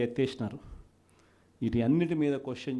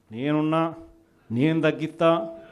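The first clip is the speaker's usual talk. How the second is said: forceful, emphatic delivery, higher and louder; 3 semitones higher, 5 dB louder than usual. Retelling his election promise to cut power charges: imitating a loud forceful promise. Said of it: "అప్పుడు ఎంత గట్టిగా అన్నాడు, మామూలు గట్టిగా కాదు".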